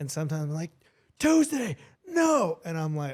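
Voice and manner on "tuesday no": very loud raised voice, very high pitch. Retelling what he says to his dog tuesday, the speaker acts out a raised voice. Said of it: "because I'll raise my voice".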